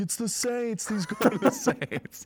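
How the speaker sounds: mock very high, shouted blurt. Retelling a phone call, speaker acts out the brother in the background: retelling brother's yell. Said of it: "my brother's yelling".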